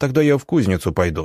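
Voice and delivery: plain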